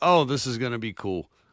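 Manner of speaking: ordinary talk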